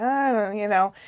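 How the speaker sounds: mock-reluctant, unenthusiastic put-on tone. Retelling a movie scene where his grandma asks about his Santa letter, imitating an unenthusiastic reply. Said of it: "he's not really feeling it".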